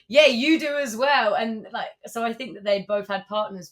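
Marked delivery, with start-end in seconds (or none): 0.1-1.3 shouting male voice, higher and louder. Retelling a drunk passenger shouting back while leaving the plane: imitating a man shouting back. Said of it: "he shouts back".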